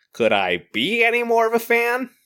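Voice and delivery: very high, swooping, sing-song, deliberate, drawn-out delivery. Playing a pretend voicemail from Chandler: Chandler voice. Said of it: "we got one from Chandler".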